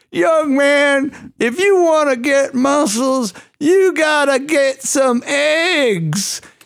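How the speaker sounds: put-on very high, sweet, slow old man voice. Recalling a jacked gym-goer in his 70s who approached the speaker, imitating an old man. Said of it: "He was like in his 70s".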